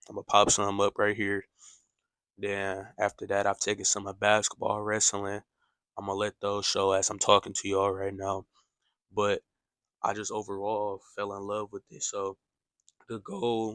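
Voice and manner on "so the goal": voice breaks mid-phrase, cracking on "goal". Speaker talking about taking sports photos in college, voice cracking. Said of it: "my bad for the voice crack".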